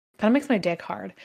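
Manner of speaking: ordinary talk, nothing marked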